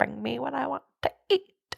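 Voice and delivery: eerie put-on creepy voice, swooping and croaky. Friends quoting a man's line to each other, creepy put-on voice. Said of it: "the way he says it is so creepy".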